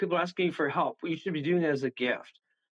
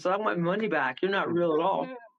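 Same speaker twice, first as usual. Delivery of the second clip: normal talking voice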